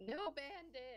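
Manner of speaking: loud yell, voice cracking very high. Playing Lionel, call back at the one who tries to keep running, voice cracking. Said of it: "voice crack".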